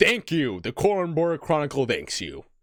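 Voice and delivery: big, loud, high booming call. Voicing a man who bows to each person taking a paper, in a booming voice. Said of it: "with a very booming".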